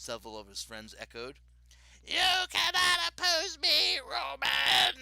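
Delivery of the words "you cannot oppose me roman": shrill, booming, high, drawn-out monster ghoul snarl. Reading a story where a ghoul threatens roman, in a snarling ghoul voice. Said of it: "The ghoul snarled".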